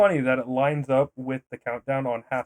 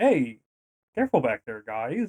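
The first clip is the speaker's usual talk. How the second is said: earnest, grave, dead-serious, mildly stern tone. Retelling a film scene where he is stomped on: David Hasselhoff voice. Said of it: "He's like".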